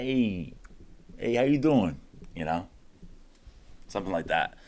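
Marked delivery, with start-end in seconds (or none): 0.0-2.0 put-on Italian guy accent. Speaker demonstrating one of the characters they can do, in an italian guy accent. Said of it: "So I could do like an Italian guy".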